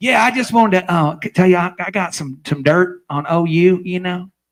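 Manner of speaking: put-on cowboy voice.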